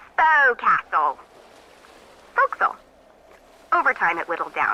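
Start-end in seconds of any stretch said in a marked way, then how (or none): 0.2-2.8 swooping, untutored, unschooled English sailor accent. Explaining how a ship word came to be pronounced, uneducated English sailor accent. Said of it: "like an English sailor with no formal education".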